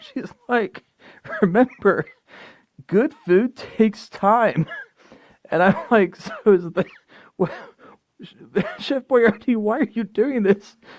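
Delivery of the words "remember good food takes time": weird put-on grandma voice. Describing a grandma stirring a pot beside her grandson, imitating a grandma. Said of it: "she's like like this weird whatever grandma mode".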